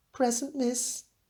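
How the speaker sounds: high-pitched voice. Reading a story aloud, a pupil answers roll call: high-pitched voice. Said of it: "he answered in a high-pitched voice".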